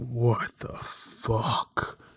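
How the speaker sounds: fed-up, at wit's end, exasperated half-orc voice. Voicing a half orc rubbing his temples at a desk: exasperated half-orc voice. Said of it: "this half orc who is just leaning over".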